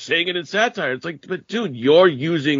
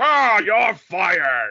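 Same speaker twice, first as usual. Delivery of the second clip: voice like a puppet on a stick; 5 semitones higher than usual. Mocking a wrestling boss as a Muppet on a stick: Vince McMahon impression as a Muppet. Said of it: "stick a stick up his fucking ass and just move him around".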